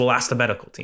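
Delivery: put-on exasperated, annoyed tone. Retelling what the manager said about injuries: imitating Mikel, pissed off. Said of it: "clearly pissed off and exasperated".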